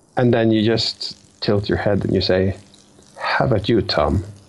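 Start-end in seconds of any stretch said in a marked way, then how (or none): 3.2-4.3 eerie, unnerving, creepy, unsettling delivery. Acting out a line said under the mistletoe at a party: creepy delivery. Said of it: "the creepiest thing ever said on the show".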